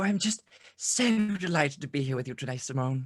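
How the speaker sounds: put-on British woman voice, gangster-ish. Co-host said to be possessed by Keira Knightley's spirit greets the host: Keira Knightley impression turning gangster. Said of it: "some like nineteen twenties gangster".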